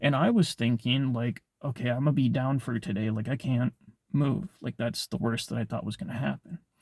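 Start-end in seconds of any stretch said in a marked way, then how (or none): none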